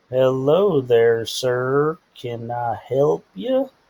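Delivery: very slow, drawn-out, slow-motion delivery. Imitating how people in Wisconsin talk: very slow speech. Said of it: "super slow motion".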